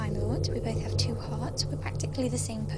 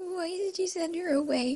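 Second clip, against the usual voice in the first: high, tearful voice, in tears, crying; 7 semitones higher than usual. Twilight speaks to the Doctor in a drama scene, crying. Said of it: "Stop crying, Twilight".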